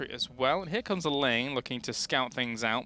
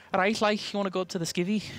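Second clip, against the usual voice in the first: put-on high-pitched Liverpool Scouse accent; 7 semitones higher than usual. Listing British accents, imitating a Liverpool speaker: Liverpudlian accent. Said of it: "a Liverpudlian accent as well".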